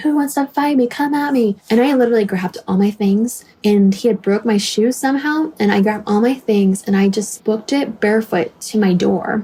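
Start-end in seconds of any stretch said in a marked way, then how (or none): 0.0-1.6 high, aggressive, angry, confrontational screaming. Retelling a man who stopped in the middle of the street: retelling a scream. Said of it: "gets in the middle of the street screaming".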